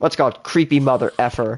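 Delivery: mock muttering under breath. Retelling muttering about a creepy staring man: imitating a mutter under breath. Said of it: "under my breath, I mutter".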